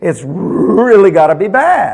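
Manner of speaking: slow, intense, drawn-out voice. Imitating how some people talk about sin, mimicking an intense voice. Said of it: "you'll hear the intensity of the voice".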